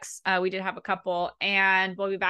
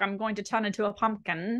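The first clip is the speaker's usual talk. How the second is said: poor, fake put-on English accent; 3 dB quieter than usual. Wrapping up a late conversation, the speaker says goodnight in a bad English accent. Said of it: "you didn't sound like her at all".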